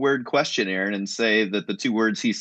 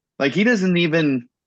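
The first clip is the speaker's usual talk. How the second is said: ordinary talk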